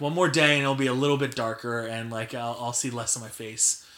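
plain

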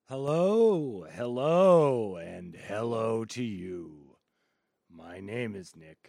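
rough, gruff delivery. The host opens his weekly show by greeting listeners, gruff. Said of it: "a little bit more of a gruff take today".

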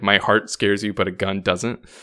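ordinary delivery

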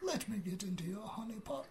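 high cartoon bear voice. Joking with the others about a honey pot: Winnie the Pooh voice. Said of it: "my Winnie the Pooh voice".

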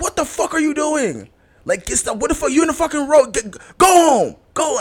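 acted out, livid, very high-pitched furious yelling. Retelling how the brother reacted on finding them in the street: imitating her livid brother. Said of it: "because he was so livid".

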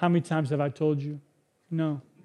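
sweet, very nice delivery. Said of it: "in a very, very nice way".

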